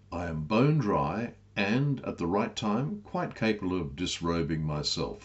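ordinary delivery

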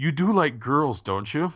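mock deadpan, flat delivery. Recounting a performer's remark to his crowd, retelling a deadpan line. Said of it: "and then he deadpanned".

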